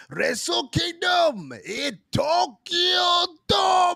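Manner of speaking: very high put-on Japanese accent, announcer voice. Retelling how the event is introduced every year: imitating the Japanese event introduction. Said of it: "I love how they introduce it".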